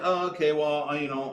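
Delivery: put-on hurried squirrelly voice. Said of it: "You're sort of racing through that".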